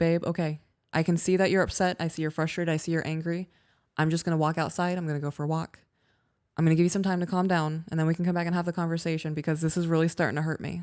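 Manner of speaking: plain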